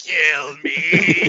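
low, curled-up, misshapen little creature voice. Imagining a half-George, half-Darla monster child curled up: voicing a deformed monster child. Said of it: "all curled up, just going".

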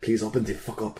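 hushed, pleading whisper. A player's character at a locked door as the party approaches, whispering. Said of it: "I whisper to the door".

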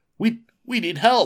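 very high, trembling, shaking, drawn-out voice. Reading a story aloud, the hero asks the roaches for help: shaking voice. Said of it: "Your voice is shaking".

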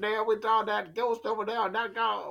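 Creole-accented speech. Doing a bit about seeing a ghost over there, in a Creole accent. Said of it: "Now I'm doing Creole".

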